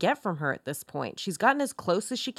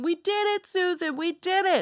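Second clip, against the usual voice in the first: mock shrill, very high-pitched shout; 9 semitones higher than usual. Telling a story, acting out what an agent shouted: retelling a shout. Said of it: "Agent Breck is shouting".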